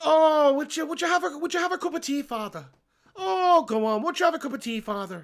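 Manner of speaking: high, coaxing character voice. Offering a cup of tea again and again: Mrs Doyle voice. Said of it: "Sounded like Missus Doyle from Father Ted".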